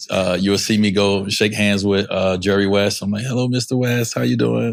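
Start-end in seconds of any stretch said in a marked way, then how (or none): 3.2-4.7 genuinely soft-spoken, mild voice. Recalling greeting Jerry West at a legends brunch as a rookie: imitating own past soft voice. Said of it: "I got a real soft voice".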